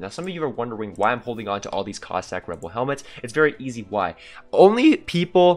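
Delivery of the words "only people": very loud, high voice breaking on "only". Gamer explaining to viewers why he keeps certain helmets, with a voice crack. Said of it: "and that was a voice crack".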